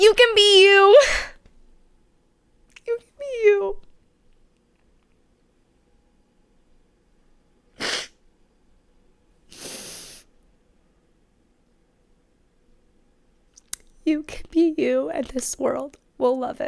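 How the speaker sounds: high, tearful voice on the edge of breaking. Speaking to the audience about the channel and podcast; on the verge of crying. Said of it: "I'm gonna cry right now".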